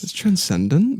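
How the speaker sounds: transcendent with a rising uptick at the end. Quoting Trevor's answer about how it was, Trevor's uptick on transcendent. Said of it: "there's always like an uptick in his voice at the end".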